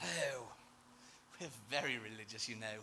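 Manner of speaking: put-on very quiet, low, soft, hushed posh accent. Mocking religious people, the speaker voices them in a posh accent. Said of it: "talk in a posh accent".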